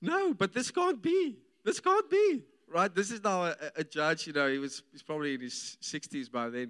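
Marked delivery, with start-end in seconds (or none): 0.0-2.4 shrill, rising, very high, stunned disbelief. Recounting a judge's reaction in court, imitating a judge's shocked high voice. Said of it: "he went into this high-pitched voice".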